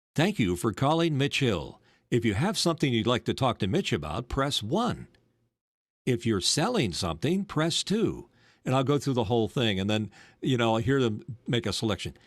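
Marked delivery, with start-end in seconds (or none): 0.2-8.3 put-on radio announcer voice and delivery. Speaker shows how they answer spam callers, in a radio announcer voice. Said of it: "Just launch into the radio voice".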